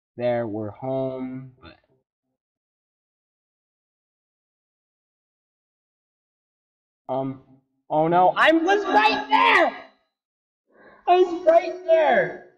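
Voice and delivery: frightened, panicking. A gamer racing to get home within the hour, scared and panicky. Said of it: "I'm so scared".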